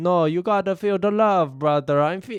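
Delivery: put-on high-pitched, slow, laid-on Jamaican accent. Retelling a comedy sketch's ending: Shane Gillis doing a Jamaican accent. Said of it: "Shane Gillis does a Jamaican accent".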